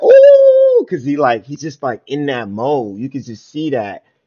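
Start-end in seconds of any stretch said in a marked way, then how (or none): 0.0-0.8 loud, very high-pitched, impressed crowd ooh. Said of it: "everybody be like".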